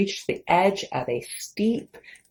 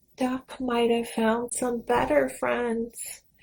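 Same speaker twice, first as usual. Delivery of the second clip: small, sad, sorrowful half-whisper; 4 semitones higher, 3 dB quieter than usual. Reading a story, Cat speaks about the missing duck, sad little half-whisper. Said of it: "whispered in a sad little voice".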